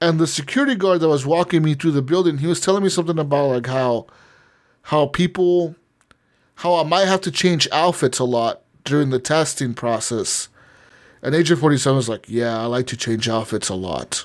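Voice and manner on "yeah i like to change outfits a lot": low, dead straight, matter-of-fact deadpan. Retelling a game line, imitating Agent 47's matter-of-fact delivery. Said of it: "so matter of fact".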